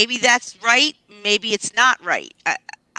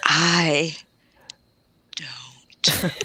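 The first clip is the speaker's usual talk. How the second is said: "i don't know" said seductively, lower; 5 semitones lower, 4 dB quieter than usual. Showing how to make "I don't know" sound sexy: saying it sexy. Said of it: "Do it like this".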